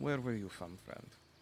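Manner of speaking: hushed whisper. A character turns his eyes back to Yue, in a hushed whisper. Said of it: "he kind of whispers it in, in a husher tone".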